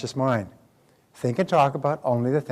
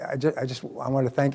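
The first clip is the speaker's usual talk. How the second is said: put-on voice of a man choking up. Retelling a seminar attendee's emotional thanks: imitating a man choking up. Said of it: "he was choking up a bit".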